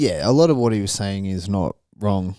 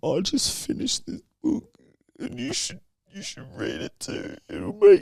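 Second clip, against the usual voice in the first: put-on tearful pleading, higher and quieter; 12 semitones higher, 4 dB quieter than usual. Retelling a video where someone recommends a book: imitating someone crying. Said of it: "he's, like, crying, man".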